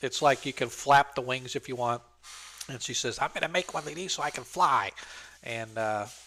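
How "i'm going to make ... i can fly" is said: put-on small, squeaky, tiny little child voice. The narrator voices a small gnome child, in a little squeaky tiny voice. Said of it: "in her little squeaky, tiny voice".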